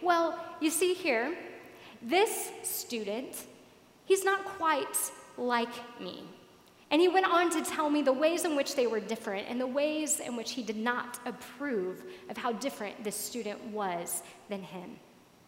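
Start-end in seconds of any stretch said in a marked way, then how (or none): 0.0-6.2 boastful, superior-sounding, pitched-up bragging swagger. Retelling a man's answer when asked who he was, imitating a bragging tone. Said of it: "in a braggadocious tone answered".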